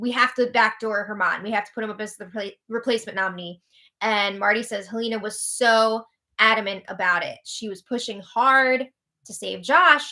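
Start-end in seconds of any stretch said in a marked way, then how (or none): none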